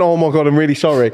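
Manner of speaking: ordinary talk, nothing marked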